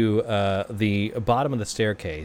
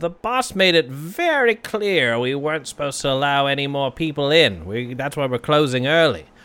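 put-on goblin barman voice; 4 semitones higher, 4 dB louder than usual. A game master voices a goblin barman turning the players away, in a goblin voice. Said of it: "You see what looks to be a goblin individual. He has the sort of maroon beret, the raspberry beret of the [name], and he is behind the bar".

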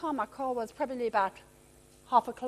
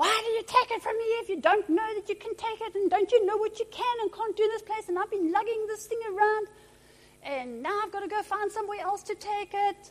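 put-on angry, complaining man's voice, irate ranting, pitched up; 7 semitones higher than usual. Retelling what an overheard man said, retelling an irate man. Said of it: "I hear this irate voice".

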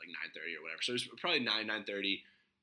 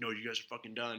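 mock-furious outburst, quieter; 5 dB quieter than usual. Telling a bar story, the speaker quotes the bartender kicking them out, imitating a furious bartender. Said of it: "So he was furious".

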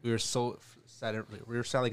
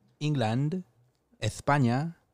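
England pronounced with a put-on foreign accent; 3 semitones higher than usual. Listing the countries visited on a trip abroad: put-on foreign accent. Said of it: "why'd you say England like that?".

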